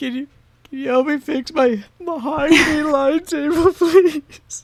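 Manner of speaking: tearful voice. In a tabletop game, a character asks for help fixing a broken table, crying. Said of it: "I'm like crying. I'm like tearing up".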